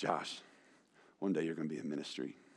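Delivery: grave, very quiet, serious pastor voice. Retelling what a youth pastor said to the speaker at seventeen: imitating serious youth pastor voice. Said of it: "like in the serious youth pastor voice".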